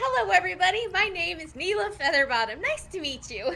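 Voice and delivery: loud, high-pitched, cheerful tone.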